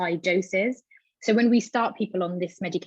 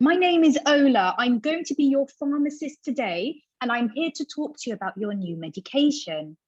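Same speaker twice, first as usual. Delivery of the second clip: loud, raised, pitched-up voice; 7 semitones higher than usual. A pharmacist retelling introducing herself to a patient who couldn't hear: raised, loud voice. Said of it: "I really raised my voice".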